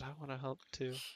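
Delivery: barely audible, hushed, very quiet half-whisper. Narrating a character who quietly taps a shoulder to help: half-whispering. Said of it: "just whispers".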